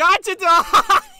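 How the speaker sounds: very loud, very slow, drawn-out bellow. Imagining a character shouting right into someone's ear: imitating Peter yelling. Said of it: "You're yelling in my ear, Peter".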